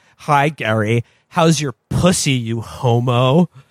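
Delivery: cold, icy, slow voice with one word drawn out. Retelling a film scene where the ice queen greets Gary: imitating a sexually alpha ice queen. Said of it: "sexually alpha, like, a Republican ice queen".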